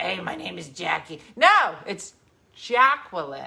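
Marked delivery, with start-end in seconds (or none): 0.0-1.2 put-on New Jersey accent. Playing a jersey waitress saying her name: put-on new jersey accent. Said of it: "not like a Jersey waitress".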